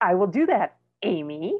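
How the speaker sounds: sassy, snarky delivery full of attitude. Complaining about how she answers back, the speaker mimics her reply with attitude. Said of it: "with this like, attitude".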